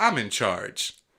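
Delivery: sarcastic tone. Introducing himself on the show: sarcastic.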